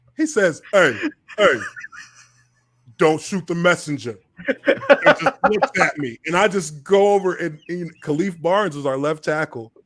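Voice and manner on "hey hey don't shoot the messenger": New York way of speaking. Retelling what Tutan Reyes said on the field, in his New York accent. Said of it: "New York accent".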